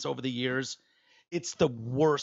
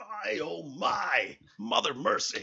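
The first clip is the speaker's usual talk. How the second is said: put-on broadcaster voice, higher pitch; 6 semitones higher than usual. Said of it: "I wonder if he thinks in that voice".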